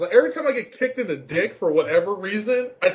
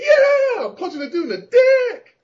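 acted-out, very high-pitched, loud shout; 5 dB louder than usual. Describing a fighting game character's moves: imitating Makoto yelling. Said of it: "she's always yelling".

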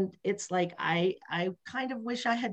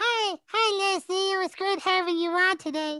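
put-on voice, much higher pitched than normal; 11 semitones higher, 5 dB louder than usual. Speaker shows the only voice trick they can do, in a high-pitched voice. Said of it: "all I can do is go high pitched in my voice".

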